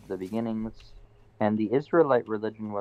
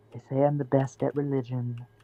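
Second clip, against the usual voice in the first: bad, emo-sounding put-on impression voice; 3 semitones higher than usual. Trying to do Trump while someone mocks the attempt, a bad Trump impression, sounding emo. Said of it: "You just sound like a fucking. You sound like a shitty emo whenever you try and do Trump".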